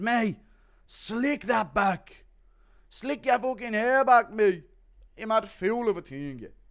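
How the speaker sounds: put-on loud, high Irish accent. Do an impression of Conor combing Matinho's hair between rounds, as a Conor McGregor impression. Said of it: "Impression of Connor".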